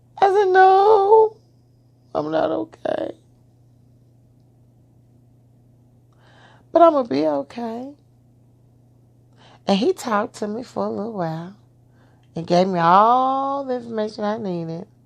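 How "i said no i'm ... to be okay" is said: tearful, crying, high, slow, with a long No. Retelling a phone call after hearing of the affair: imitating own past crying. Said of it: "And by now I'm crying".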